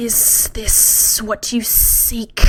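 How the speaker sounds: very slow, drawn-out hissing creature voice. A narrator reads a figure stepping out in a graveyard, hissing. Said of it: "it hissed".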